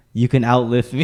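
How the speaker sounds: plain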